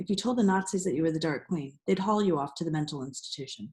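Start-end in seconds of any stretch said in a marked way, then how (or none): none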